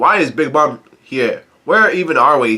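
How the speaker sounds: normal talking voice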